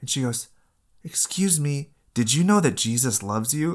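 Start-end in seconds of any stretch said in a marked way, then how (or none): 1.0-3.8 put-on tiny, high, squeaky, mousy little-girl voice. Retelling what a little girl at a hockey game said, in a little mouse voice. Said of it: "she's got this little mouse voice".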